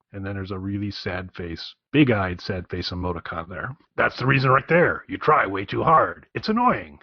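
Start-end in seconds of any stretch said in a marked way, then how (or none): 3.9-6.8 voice pushed down into the chest. Reading out joke superhero text messages, answering as Venom in a put-on lower voice. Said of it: "Venom will sound like [name] trying to talk in a lower voice".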